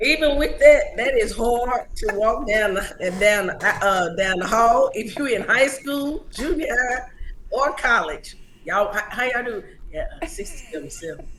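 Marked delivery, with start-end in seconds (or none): 9.9-11.3 soft, low, embarrassed whisper. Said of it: "You whisper it?".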